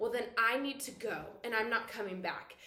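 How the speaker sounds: ordinary delivery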